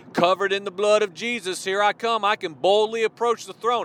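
ordinary delivery

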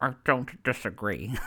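imitated mumbling. Retelling a TV bedroom scene where the wife answers her husband, imitating her mumbling. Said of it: "She just mumbles".

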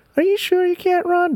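very high, squeaky voice. Retelling a game session, imitating the other speaker asking a question. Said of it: "There you go, impression of you".

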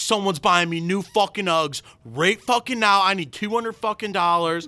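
mock screaming in a woman's voice. Telling a story about an older lady who flipped out, imitating her screaming. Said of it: "She's screaming".

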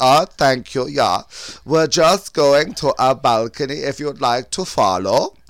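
terrible German accent.

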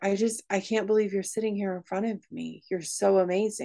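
put-on tearful sobbing. Retelling what a sobbing young man told the speaker, imitating someone sobbing. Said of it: "he is sobbing".

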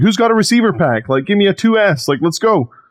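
high-pitched, play-acted yelled call-out. Retelling calling out to the people around: retelling own yelling. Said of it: "So I'm yelling".

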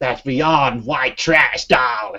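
very bad put-on American accent. In a reference guessing game, answering in a bad Joan Rivers accent. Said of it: "That is the worst American accent".

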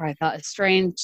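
ordinary talk

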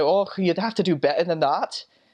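put-on Scottish accent. Retelling what scottish people would say to him: imitating a scottish accent. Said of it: "that'd be the Scottish people".

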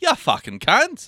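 very high put-on British accent. Joking around, the speaker tries out a put-on British accent. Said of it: "That was British, too".

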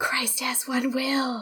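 secretive, soft, hushed whisper. Acting out a priest praying into a dead man's ear: imitating someone whispering. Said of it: "Gonna whisper".

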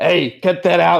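loud, high yelling. Character turns and yells toward the editor in the corner, yelling. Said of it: "He turns and like yells into the corner".

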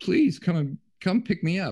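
put-on high, tearful, crying, scared toddler voice. Retelling a childhood plea to a father on a hill: imitating own tearful plea. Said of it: "tears are streaming down my eyes".

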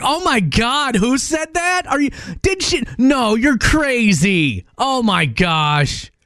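loud, high-pitched, very slow chattering delivery. Imitating her talking on the phone to her sister: imitating someone talking loudly on the phone. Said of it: "in and be loud".

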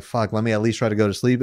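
ordinary talk

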